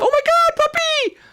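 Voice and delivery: very high, slow, drawn-out cooing. Explaining how tone of voice changes, show it: demonstrating puppy-talk tone. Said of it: "Changes our, the tone of our voice".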